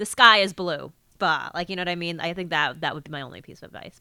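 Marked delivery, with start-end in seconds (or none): 0.0-0.9 firm falling statement tune, drops on blue. Advice to make the line sound like a statement: firm falling end. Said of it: "This is a statement. Like, be like".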